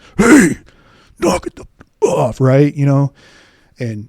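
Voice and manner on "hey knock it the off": very loud, very high, shrill barked delivery. Former law enforcement officer retells stopping two people arguing: retelling a command voice. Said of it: "use that voice as a command".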